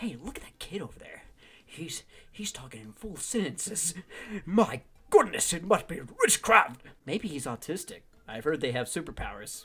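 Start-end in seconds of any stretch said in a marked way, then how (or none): 0.0-6.8 astonished, shocked and amazed. Retelling how store strangers reacted to the speaker's little brother, imitating shocked strangers. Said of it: "random people in the store were shocked".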